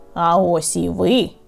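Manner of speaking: grumpy muttering. Scrooge greeting Bob, who arrives late to work, grumbling. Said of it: "пробурчав Скрудж".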